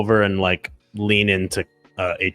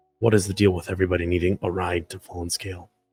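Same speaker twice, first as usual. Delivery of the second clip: whispering, quieter and faster; 2 semitones lower, 6 dB quieter than usual. Playing a character who walks over to the driver, whispering. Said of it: "just kind of like whispers like".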